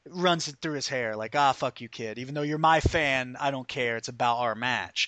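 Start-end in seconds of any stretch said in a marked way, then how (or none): none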